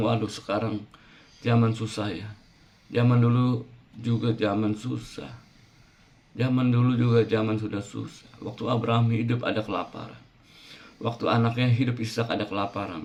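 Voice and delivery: ordinary talk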